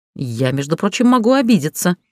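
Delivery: ordinary delivery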